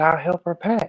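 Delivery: put-on feigned guileless childlike voice. Retelling how Bishop Don Magic Wand answered: imitating an innocent, childlike tone. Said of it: "He said it like an innocent child".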